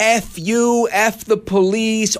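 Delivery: very slow, stretched-out outburst. Retelling a disturbed man screaming at a police car, imitating a man screaming. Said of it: "He's yelling".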